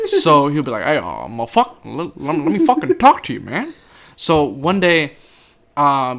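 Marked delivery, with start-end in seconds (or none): 0.8-3.7 swinging pitch with a stumbling opening. Retelling how a coach talks: imitating Coach Chanel. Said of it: "impersonate Coach Chanel".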